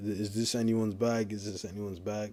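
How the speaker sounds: plain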